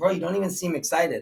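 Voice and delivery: normal talking voice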